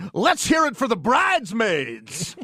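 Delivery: bad wedding DJ announcer voice, hyping. Comparing a stadium announcer to a wedding DJ: imitating a bad wedding DJ. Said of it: "it sounds like a bad D J at a wedding".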